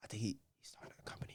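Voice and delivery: very quiet whisper under the breath. Acting out people scheming to make money off him, whispering. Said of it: "I don't know why I'm whispering".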